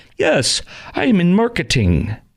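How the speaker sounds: altered voice, slow and drawn out with big swoops. Retelling a scene from Muppets Take Manhattan, imitating Kermit the Frog's changed voice. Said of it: "He talks like that instead of talking like he normally does".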